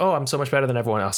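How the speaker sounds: play-acted offhand, nonchalant, lofty superior air. Retelling how a YouTuber reported on someone's breakdowns: imitating Keemstar, nonchalant and superior. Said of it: "nonchalantly and very, like".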